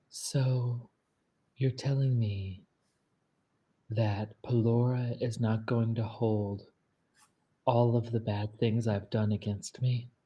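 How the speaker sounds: hushed whisper. A player's character leans in close to the maestro and asks: whispering. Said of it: "like whispering".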